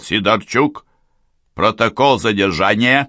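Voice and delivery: loud commanding voice. An officer calls someone into the room, raised voice, commanding. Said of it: "возвысил голос и скомандовал".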